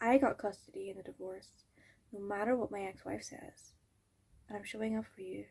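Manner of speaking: very quiet hushed voice. Talking to someone while a person is in the hall, lowered, hushed voice. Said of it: "That's why I lowered my voice".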